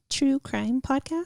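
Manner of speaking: put-on tiny, small, high little-girl voice. Speaker retells answering a date who asks what podcast: little girl voice. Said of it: "my like little girl voice".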